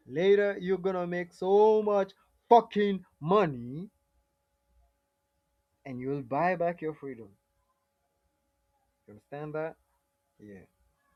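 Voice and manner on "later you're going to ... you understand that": very loud, high-pitched shouting. Pressing a listener he calls bro to understand, shouting. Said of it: "Sorry for shouting".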